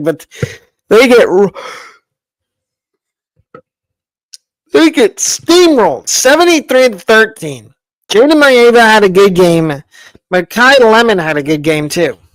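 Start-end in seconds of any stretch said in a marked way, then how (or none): 0.0-7.7 words broken up by laughter. Reading out a lopsided game score, laughing while talking. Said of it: "I'm sorry if I'm laughing".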